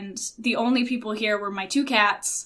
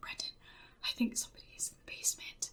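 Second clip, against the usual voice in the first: soft, breathy whisper under the breath. Retelling a phone call about someone in the basement: imitating a whisper. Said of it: "I was literally whispering".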